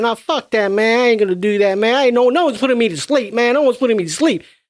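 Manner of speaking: amped-up, high-pitched, hyped-up streetwise ranting. Quoting the movie character refusing to sleep: imitating a hyped-up Kincaid. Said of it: "He's just hyped up".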